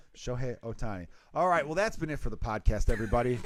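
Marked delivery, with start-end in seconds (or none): 0.2-1.1 exaggerated put-on Japanese accent on a name. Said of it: "put the accent in there".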